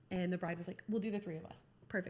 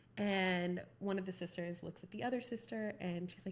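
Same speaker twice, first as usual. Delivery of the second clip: plain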